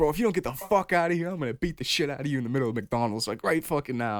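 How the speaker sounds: put-on, full freaking-out outburst. Retelling a friend threatening a crackhead in McDonald's: imitating Dan freaking out. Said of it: "Dan just starts freaking out".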